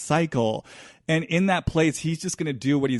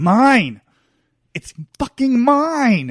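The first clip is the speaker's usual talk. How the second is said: furious, very loud shout, "mine" drawn out; 8 semitones higher, 8 dB louder than usual. Voicing a thief speaking to the victim he stole from; angry shouting. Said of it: "it's so angry".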